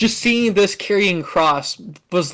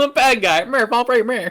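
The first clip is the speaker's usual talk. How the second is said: put-on 1920s gangster voice, much higher pitch; 5 semitones higher than usual. Discussing the voice he uses for every bad guy, doing a 1920s gangster voice. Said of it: "Every bad guy is just a nineteen twenties gangster to you".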